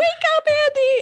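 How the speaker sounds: play-acted, very high shrieked wail. Retelling a TV scene's final moment, as Moira calls to Andy; retelling Moira screaming. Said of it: "Moira just screams".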